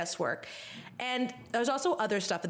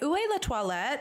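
put-on French words in a totally Valley Girl accent; 5 semitones higher than usual. Retelling how the speaker asks for the toilet in France, in a Valley Girl accent. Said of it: "in a totally Valley Girl accent".

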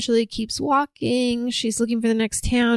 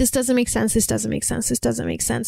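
ordinary talk, nothing marked

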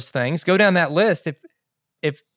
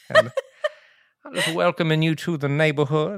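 very slow, soothing Southern Georgia drawl. Retelling how a man came over to welcome you, in a slow-as-molasses, soothing Mr. Culpepper voice. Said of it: "slow as molasses".

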